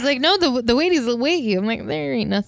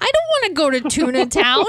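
high-pitched, grossed-out, disgusted squeak; 5 semitones higher, 3 dB louder than usual. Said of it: "I'm getting really high-pitched right now because I'm so disgusted".

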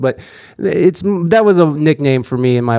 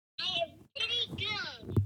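tiny, very high, soft, hushed voice; 21 dB quieter than usual. Answering as Baby Yoda in a mock interview: Baby Yoda voice. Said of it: "What'd you say, Baby Yoda?".

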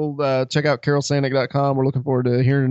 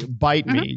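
ordinary talk, nothing marked

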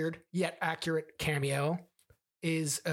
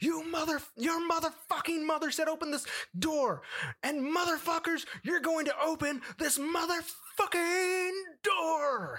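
furious scream, very high-pitched. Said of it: "and screams".

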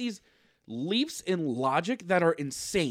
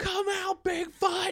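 put-on yelling, higher; 13 semitones higher than usual. Imitating monster hunters in the woods: imitating hunters yelling. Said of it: "walked into the woods yelling at the monsters".

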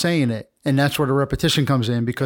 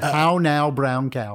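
put-on news anchor voice. Retelling doing a newscast in a TV studio class: Ron Burgundy voice. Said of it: "doing my Ron Burgundy impression".

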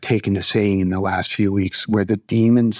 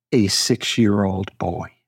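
said much slower, slow and deliberate. Repeating a point for emphasis in a discussion, saying it again slowly. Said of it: "I'm just going to say that again slowly".

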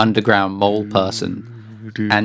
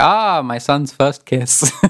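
slow, delighted, excited proud fatherly voice; 4 semitones higher than usual. Retelling what the dad in the game says: imitating an excited dad. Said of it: "he's all excited".

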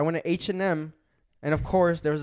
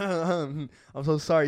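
mock embarrassed tone, slower. Retelling how a guy apologized after his voice cracked, imitating an embarrassed apology. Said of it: "You could tell he was so embarrassed".

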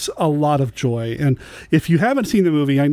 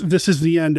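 ordinary talk, nothing marked

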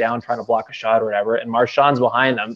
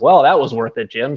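put-on sarcastic tone; 4 dB louder than usual. Recounting what the speaker said to jim at the end, sarcastically.

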